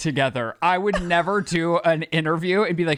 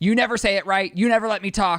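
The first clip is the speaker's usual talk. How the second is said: mock furious ranting, angry barked outburst; 3 semitones higher than usual. Retelling how she shut him down on camera: imitating an angry outburst. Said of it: "angrily gets mad on camera and says".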